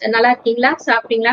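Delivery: ordinary talk, nothing marked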